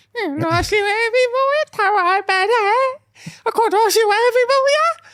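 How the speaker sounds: put-on very high, sly, smug, teasing lilt. Retelling what the friend said about the outfit: imitating a friend's smirking tone. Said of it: "says it with a smirk".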